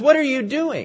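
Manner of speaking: acted-out angry voice. Retelling a story, a man being lifted by a woman: imitating an angry question. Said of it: "he said angrily".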